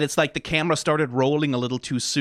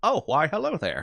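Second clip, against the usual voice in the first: fatherly cadence and tone; 2 semitones higher than usual. Describing how an actor delivers a greeting: imitating Walt Disney's fatherly cadence. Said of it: "a good impression of, like".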